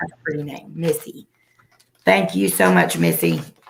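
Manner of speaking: worn-out, failing voice with swooping pitch. Speaker thanking someone by name, voice giving out. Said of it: "My voice is going".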